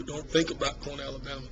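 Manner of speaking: ordinary talk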